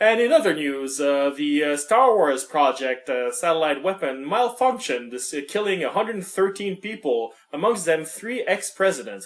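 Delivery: put-on news-anchor voice reading like a bulletin. Retelling the movie's opening news footage: imitating a newscaster. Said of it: "You'll have a newscaster going like".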